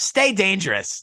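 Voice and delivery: high, loud, punchy cartoon hero voice. Retelling a voice actor's reply after the speaker praised him, in Darkwing Duck voice. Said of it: "like as Darkwing Duck".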